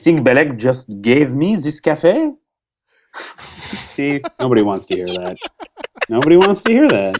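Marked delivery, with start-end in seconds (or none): 0.0-2.3 heavy, exaggerated, over-the-top French accent, swooping. Redoing a favorite line for the others, in a heavy french accent. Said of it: "but with a heavy French accent".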